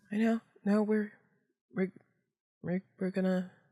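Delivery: high, halting stammer, struggling to get words out. Answering a companion's reassurance, barely getting words out. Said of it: "She can barely like get words out".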